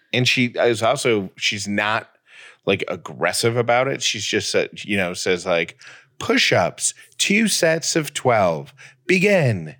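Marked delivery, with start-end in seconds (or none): 6.1-9.5 put-on high, slow Australian accent. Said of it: "she says it in an Australian accent".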